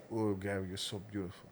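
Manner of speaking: put-on hushed, very quiet Brazilian-accented voice. Retelling what an interview mediator said to an interviewee, in a brazilian accent. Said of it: "in his Brazilian accent".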